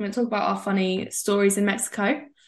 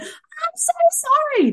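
mock shrill, high, loud, tearful crying wail; 5 dB louder than usual. Retelling a drunk woman in the audience apologising, imitating her crying loudly. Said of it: "she was like crying".

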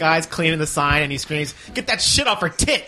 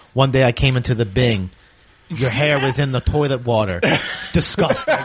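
mock bone-dry deadpan, low and flat; 5 semitones lower than usual. Retelling a favorite show moment, quoting a character at an intervention, imitating a deadpan delivery. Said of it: "he just deadpans it and he goes".

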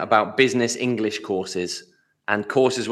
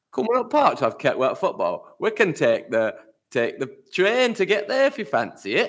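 attempted Yorkshire accent, high and sing-song; 9 semitones higher than usual. Asked to give an accent a go, trying it out: yorkshire accent. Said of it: "that sounds Yorkshire".

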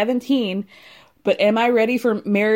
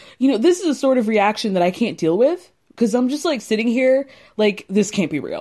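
ordinary talk, nothing marked

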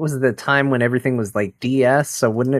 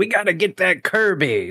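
high, swooping, animated cartoon villain voice; 7 semitones higher than usual. Speaker recalls how a character talked in a kirby cartoon, imitating a kirby cartoon character. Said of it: "wasn't he always like".

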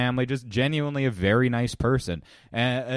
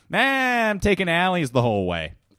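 put-on high-pitched, hammered drunk voice, offhand and dismissive; 6 semitones higher, 4 dB louder than usual. Retelling what a drunk comedian said about driving home: imitating a drunk comedian. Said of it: "Good impression".

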